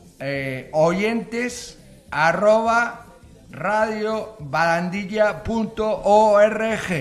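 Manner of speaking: slow, loud, spelled-out delivery.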